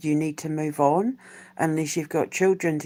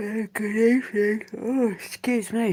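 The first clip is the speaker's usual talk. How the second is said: talking through a yawn, higher and slower; 6 semitones higher than usual. Opening with a good evening, yawning while speaking. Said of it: "I'm yawning away".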